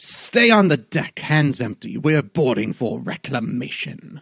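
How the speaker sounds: loud, high-pitched shout carrying far. Voicing an owling shouting at the players to stay on deck: shouting owling. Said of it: "he shouts in your direction".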